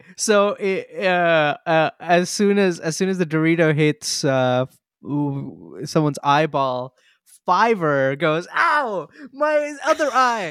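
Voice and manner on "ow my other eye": very high-pitched, pained scream of agony. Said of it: "Fiverr screams for losing his eye".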